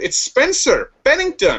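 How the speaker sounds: very high, sing-song, swooping teacher voice. Retelling what a professor said about students' names: imitating Mister Kumar. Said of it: "I probably shouldn't do this impression".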